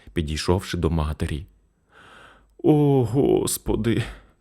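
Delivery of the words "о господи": moaned out, groaning. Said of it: "застогнала хвора".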